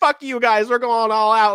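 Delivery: put-on furious, fed-up, exasperated angry outburst. Retelling own words to people at a protest: retelling own furious outburst. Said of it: "I was so infuriated".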